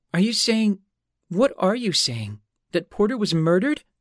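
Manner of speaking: protesting. A newly widowed woman answers a detective, protesting. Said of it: "the newly widowed Allie was protesting".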